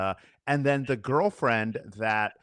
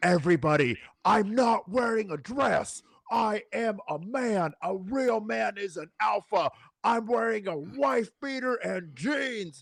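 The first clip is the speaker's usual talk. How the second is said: mock screaming, higher pitch; 9 semitones higher than usual. Retelling what a man in his videos screams: imitating someone screaming. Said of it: "he starts screaming".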